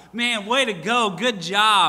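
put-on worked-up excitement. Retelling how a partner reacted to losing the final game: imitating Brother Tim, excited. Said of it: "he's all excited about".

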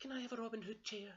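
very high, loud pleading, begging tone. A bear cub walking through the woods with his parents, begging. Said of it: "begged Baby Bear".

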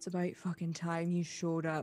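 growling voice. A game narrator voices a character growling at the player character. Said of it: "and he sort of growls at you".

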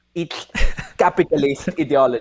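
put-on Slovenian accent. Doing an impression of a public intellectual's accent: Slavoj Žižek impression. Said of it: "He's like".

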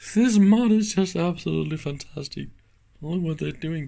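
talking through uncontrollable laughter. Showing viewers an odd capacitor mod in old equipment: can't stop laughing. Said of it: "I can't stop laughing".

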